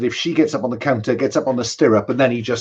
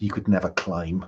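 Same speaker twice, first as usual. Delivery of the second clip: whisper, much lower and quieter; 5 semitones lower, 6 dB quieter than usual. A man lifting her up through the ceiling, whispering to her, whisper. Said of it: "he whispers something like".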